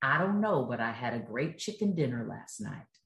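low, slow, easy Southern drawl. Retelling a race winner's answer about his win, in Johnny Rutherford's slow Southern drawl. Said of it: "in his very kind of Southern slow drawl".

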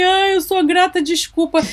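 words said through tears, tearful and crying. Retelling saying Ho'oponopono words while crying: retelling own tearful words. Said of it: "eu chorava".

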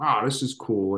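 normal talking voice

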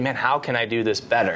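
normal talking voice

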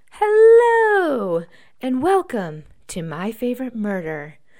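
very loud, swooping sing-song host voice, hello stretched. Imitating how the podcast hosts open every show, My Favorite Murder intro impression. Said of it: "That's my impression of them".

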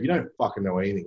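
ordinary talk

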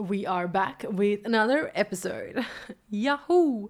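slow, drawn-out radio announcer voice. Kicking off a new episode: a bit of a radio voice. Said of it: "I need to do a bit of a radio voice".

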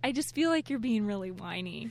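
ordinary delivery

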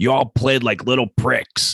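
put-on, high, half-strength yell. Retelling a TV scene where Roy yells at a girls' soccer team, imitating Roy yelling. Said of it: "he's on a soccer field and he's yelling".

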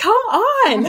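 very high, frantic, urgent mock yell. Recounting being wheeled out of the room, yelling at him: retelling own past yell. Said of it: "I'm yelling at him like".

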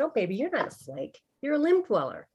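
very sweet, very gentle, swooping voice. Recounting a mentor's phone call during heartbreak, imitating Tracy speaking sweetly, gently. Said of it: "she very sweetly and very gently said".

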